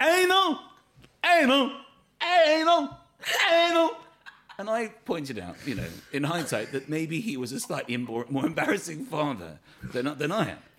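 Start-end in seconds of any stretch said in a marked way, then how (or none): 0.0-4.0 stretched yell, very high, very loud, drawn-out. Retelling a father frozen-faced in the middle of the pitch, imitating Anthony shouting. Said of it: "standing in the middle of the pitch shouting".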